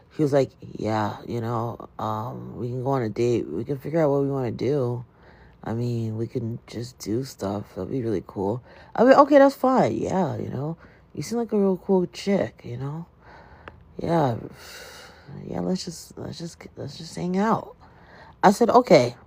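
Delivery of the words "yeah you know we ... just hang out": put-on miserable, lifeless, low, soft robotic drone. Retelling how a man sounded when he called about their date; imitating a miserable robotic voice. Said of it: "he sounded like a robot. Like he sounded very miserable".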